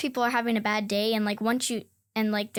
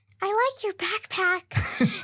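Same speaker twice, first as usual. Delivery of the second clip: very high, sweet voice, words stretched slow; 10 semitones higher than usual. Retelling the first words a classmate said to them: imitating Hallie's voice. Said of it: "her voice is just like this".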